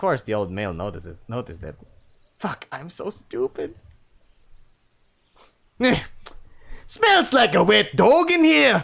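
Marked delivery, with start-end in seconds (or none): 6.9-8.8 put-on high, loud, slow Scottish accent. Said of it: "Maybe I'll give him a Scottish accent".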